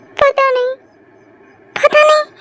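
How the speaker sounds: tearful, high-pitched speech through crying. Asked why they are crying, someone answers, crying while talking. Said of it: "क्यों रो रही हो?".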